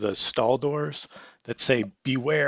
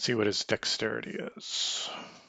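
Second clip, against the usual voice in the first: usual speaking voice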